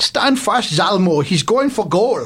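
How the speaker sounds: tentative, attempted, put-on Swedish accent. Speaker, unsure they can do it, tries a Swedish accent: attempted Swedish accent. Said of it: "I'm not sure if I can do a Swedish accent".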